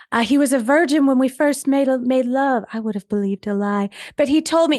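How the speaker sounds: offhand, parenthetical aside in different voice. Recreating how an audiobook reads a stream-of-consciousness aside: imitating a quieter aside voice. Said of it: "she just says it kind of in a different voice".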